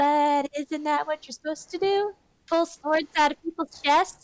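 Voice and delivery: genuinely baffled, puzzled, confused tone. Playing a character who asks why the sword shouldn't be pulled: confused. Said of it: "I get a really confused look and just like".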